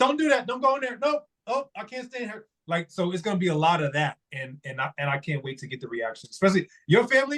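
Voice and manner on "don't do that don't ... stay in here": shrill, high-pitched hollering. Describing how they react at the premiere: yelling at a movie screen. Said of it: "We like to yell at the movie screen".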